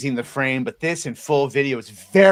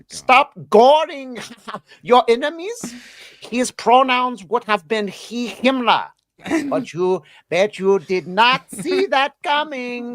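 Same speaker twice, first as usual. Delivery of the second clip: fake German accent, pitched very high; 11 semitones higher than usual. Asked to read posts aloud, the speaker puts on a german accent. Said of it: "how is your German accent? I need you to read".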